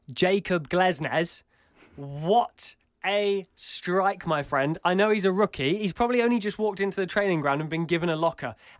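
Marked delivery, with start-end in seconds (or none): 0.1-4.7 very slow, put-on British accent. Discussing goal of the month, a speaker praises a rookie's strike: best British accent. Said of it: "I will say this in my best British accent".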